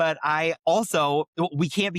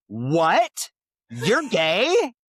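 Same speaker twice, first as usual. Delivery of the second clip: put-on swooping judgmental little kid voice, "what" drawn out; 3 semitones higher, 4 dB louder than usual. Retelling a five-year-old girl's reaction to the speaker's news, imitating her judgmental tone. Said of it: "so judgmental".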